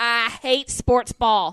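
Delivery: very loud, thick, drawn-out put-on Southern drawl. Complaining about sports ball: extra-exaggerated southern accent. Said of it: "I say it with extra, extra Southern accent".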